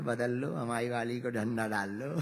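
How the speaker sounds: said softly. Retelling a story, quoting words said into another's ear, softly. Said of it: "Hanuman जी धीरे से बोले".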